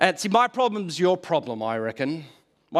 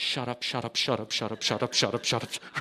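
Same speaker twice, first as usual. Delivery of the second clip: mock muttered whisper, lower and quieter; 5 semitones lower, 7 dB quieter than usual. Retelling a childhood moment staring into a backyard bush: imitating muttering under breath. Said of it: "under my breath".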